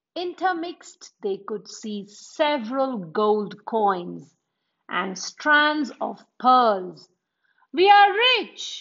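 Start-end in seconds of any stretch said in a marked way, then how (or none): 7.7-8.8 shrill, very high, excited scream. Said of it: "the boy screamed".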